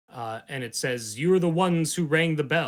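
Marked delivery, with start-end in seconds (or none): 1.1-2.7 deep, booming, louder and faster. Narrating a game, the speaker voices a voice inside the players' heads: booming deep voice. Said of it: "it's this booming, deep voice".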